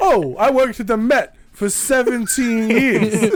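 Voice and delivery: put-on thick Brooklyn accent. In a museum scene, a character who worked at the Met speaks with a thick Brooklyn accent. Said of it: "that thick Brooklyn accent".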